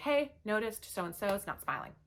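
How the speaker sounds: ordinary talk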